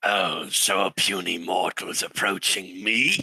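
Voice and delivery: low, slow, haughty, condescending fey creature voice. Narrating a game, voicing a creature speaking as the players approach, Sylvan-speaking creature voice. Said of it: "you hear in Sylvan".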